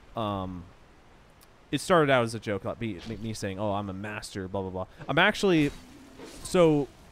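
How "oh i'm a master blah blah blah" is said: normal talking voice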